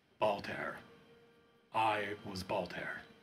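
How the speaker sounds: deep, cavernous, far-off voice with echo. A figure speaks without moving its mouth, cavernous distant voice. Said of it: "this cavernous voice, comes out from uh, from somewhere far, far away".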